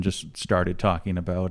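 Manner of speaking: ordinary talk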